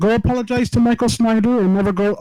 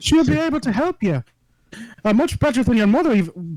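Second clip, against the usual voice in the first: rough, attempted put-on Irish accent. Player speaking in character while drinking, Irish accent. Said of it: "I'm trying to do an Irish accent".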